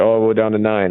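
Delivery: ordinary talk, nothing marked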